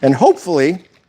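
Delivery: voice breaking. Walking through a recipe while whisking, voice cracking. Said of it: "don't know why my voice cracked there".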